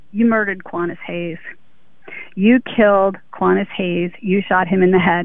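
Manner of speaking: normal talking voice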